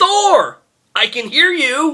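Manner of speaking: very high-pitched, very slow, drawn-out shriek. Retelling a villain's line from the movie, imitating Loki screaming. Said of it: "Exactly the same".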